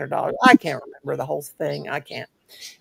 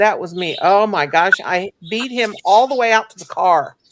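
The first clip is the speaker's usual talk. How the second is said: usual speaking voice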